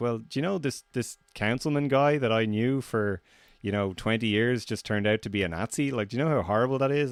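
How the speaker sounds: normal talking voice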